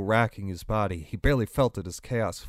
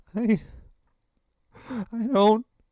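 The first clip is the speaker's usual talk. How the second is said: whimpered at a very high pitch; 12 semitones higher, 3 dB louder than usual. Ryan, pressed by Chaos, frantically pushes at his car, whimpering. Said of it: "Ryan whimpered".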